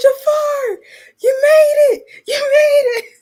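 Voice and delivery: high, loud, excited, thrilled cheer. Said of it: "I was like".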